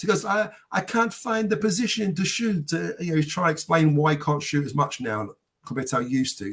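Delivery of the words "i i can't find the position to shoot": slow, pitched-up, terrible put-on German accent. Quoting a man explaining why he shoots less now, terrible German accent impression. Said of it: "It's a terrible German impression".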